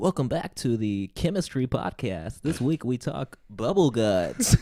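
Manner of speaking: loud, put-on radio broadcaster announcer delivery. Chatting with the other speaker, doing a bit in a radio broadcaster voice. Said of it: "that's my broadcaster voice".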